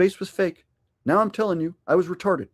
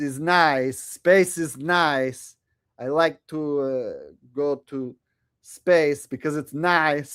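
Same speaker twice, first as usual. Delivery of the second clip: clumsy, slow put-on foreign voice, "nice" stretched out; 4 semitones lower than usual. Answering a viewer's request with a bad Borat impression. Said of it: "my Borat impression sucks".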